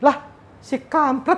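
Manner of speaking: high, slow, startled surprised yelp.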